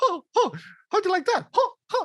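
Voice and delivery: very high cartoon voice with swooping, swinging pitch. Retelling someone who kept talking in the Mickey Mouse voice: Mickey Mouse voice. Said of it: "he was still speaking in the Mickey Mouse voice, like".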